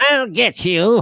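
eighties cartoon bad guy. Quoting the cartoon villain's line: cartoon bad guy voice. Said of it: "generic, uh, bad guy voice in cartoons".

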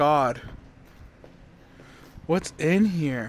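frightened. A player, afraid to open what they found in the game: scared. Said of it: "I'm so scared".

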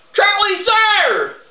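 loud yelled voice. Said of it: "you don't have to yell it".

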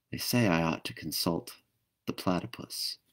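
whispering. She stoops down close to Dot and speaks into her ear, whispered. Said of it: "she whispered in Dot's ear".

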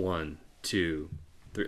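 drawn-out, slow, soft, deliberate delivery. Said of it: "like, real slow".

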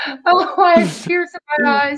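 high, teary laughter, giggling.

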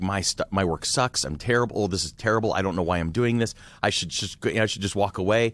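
usual speaking voice

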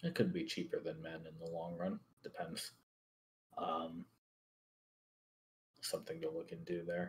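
very soft mutter under the breath.

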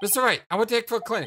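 blaring, too loud, high-pitched outburst. Apollo calls out to mr. wright, too loud. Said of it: "use your indoor voice".

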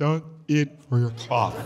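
long, slow, drawn-out yoga teacher voice. Mimicking what yoga class teachers would say: stretched yoga-instructor voice. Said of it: "they stretch a lot, their vocal cords".

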